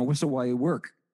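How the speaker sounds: plain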